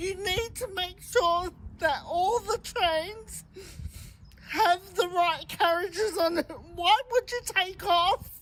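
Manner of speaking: tearful words with dysarthric speech. Passenger addressing V-Line about the missing all-access carriage, tearful, with dysarthria. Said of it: "(Tearfully, with dysarthria)".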